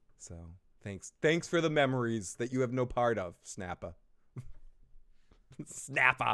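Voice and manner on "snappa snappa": "snapper" said "snappa," r-less Boston accent. Saying a name aloud; Boston accent. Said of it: "you can hear my Boston come out".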